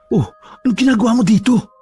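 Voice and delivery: whispering. Reading a story aloud, asking an unexpected visitor at the door: whispered question. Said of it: "Pabulong niyang tanong".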